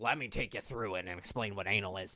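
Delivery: put-on deep elderly woman's voice. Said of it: "with that old lady's voice talking".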